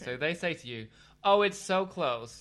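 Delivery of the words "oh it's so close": put-on American tourist accent, raised and slow, drawn out. Speaker imitates americans on holiday, in a put-on american accent. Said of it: "Shall I do the accent?".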